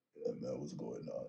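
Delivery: put-on sleepy, just-woke-up voice. Imagining someone who always talks like this: imitating a just-woke-up voice. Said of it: "imagine you talk like that all day".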